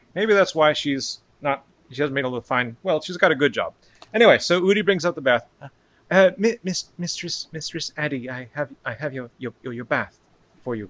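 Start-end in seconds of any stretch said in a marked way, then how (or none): 6.1-10.9 soft, halting stammer, repeating words. Udi brings up the bath for Mistress Addie, stuttering. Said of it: "apparently, she stutters".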